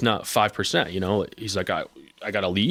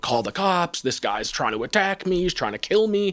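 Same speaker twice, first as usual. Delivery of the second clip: mock high screaming, building and rising as it goes; 9 semitones higher than usual. Recounting a confrontation, the speaker imitates the man who was screaming at him. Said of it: "he's screaming and pointing at me".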